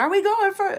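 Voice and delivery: very high, loud, excited yelping dog scream. Retelling how the dog reacts to the rock hounding bag: imitating a dog screaming. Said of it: "She just starts screaming".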